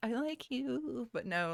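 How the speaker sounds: put-on witch-like voice, soft and high. Describing Miria's crush-like declaration to Harris, witchy voice.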